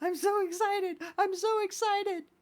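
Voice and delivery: play-acted frantic panic, very high, loud babbling. Recalling a Saved by the Bell episode, imitating the girl's panic attack. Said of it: "she's just having a panic attack, going like".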